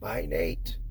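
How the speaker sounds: the smallest, tiniest little whisper. Retelling a twelve-year-old boy saying goodbye as he walked out, in the smallest little voice. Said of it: "in the smallest little voice".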